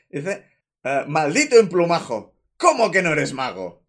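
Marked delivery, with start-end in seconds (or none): 1.1-3.7 loud, imposing, commanding, swooping voice. Voicing a character's line in the voice described earlier: imposing voice. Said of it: "con esa voz que hemos descrito".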